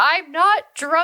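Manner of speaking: shrill, loud yell, pitched high. Retelling a night of crying and throwing up, talking to a man: retelling a yell. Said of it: "I'm like yelling that".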